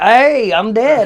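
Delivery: put-on country accent. Retelling what the man he snuck up on said, country accent impression. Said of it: "because he got that country ass accent".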